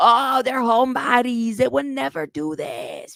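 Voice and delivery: heavy, rough smoker's voice. Retelling grandma coming forward to defend the men in the family; grandma's smoker's voice. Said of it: "with her Virginia Slim voice".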